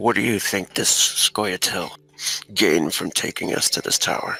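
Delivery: stage whisper in a put-on character voice. Voicing a character leaning in to the others: half-whispering in character. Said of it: "to whisper it more than anything".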